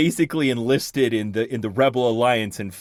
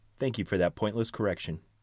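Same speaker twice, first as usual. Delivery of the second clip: driest possible deadpan, soft; 2 semitones lower, 8 dB quieter than usual. Showing what you say when a family member corrects you, driest possible voice. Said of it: "in my driest possible voice".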